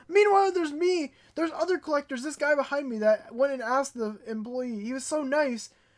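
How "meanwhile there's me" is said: louder, higher-pitched yelling. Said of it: "I know I'm yelling".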